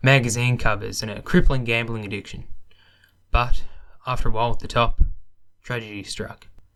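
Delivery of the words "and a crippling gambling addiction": normal talking voice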